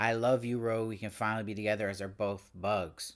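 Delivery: ordinary talk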